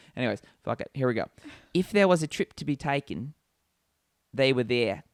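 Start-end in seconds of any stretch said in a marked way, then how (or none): 1.7-4.9 bad Cockney accent attempt slipping into Australian. Speaker tries a Cockney accent to read a line, Cockney attempt sounding Australian. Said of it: "Australian accent".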